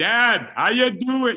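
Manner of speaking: very loud, slow speaking up. Showing how he'd greet his dad whose hearing is gone, speak up loudly. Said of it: "the hearing is gone".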